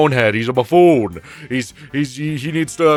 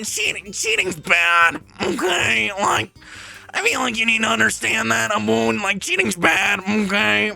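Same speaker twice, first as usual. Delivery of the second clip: put-on funny dubbed voice, higher and quieter; 8 semitones higher, 4 dB quieter than usual. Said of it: "a funny voice, or at least the English dub voice".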